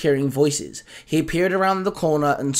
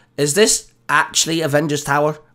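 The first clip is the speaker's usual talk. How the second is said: ordinary delivery, nothing marked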